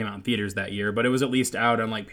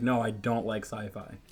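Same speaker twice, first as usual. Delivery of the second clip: mock sweet, sad old lady voice, much quieter; 5 dB quieter than usual. Telling how she refused sci-fi, mock sweet sad old lady voice. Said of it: "like sad old lady voice".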